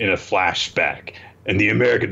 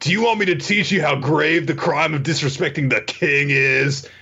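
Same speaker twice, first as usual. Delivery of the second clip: put-on surfer dude voice, higher; 6 semitones higher than usual. Retelling a chef character's speech to a gangster: surfer dude voice. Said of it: "he's Surfer Dude again".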